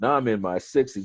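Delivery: ordinary delivery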